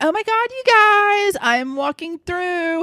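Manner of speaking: put-on very high, drawn-out, self-important wannabe girl voice. Retelling what a girl with a bright light said: imitating a wannabe girl. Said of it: "this little wannabe girl going".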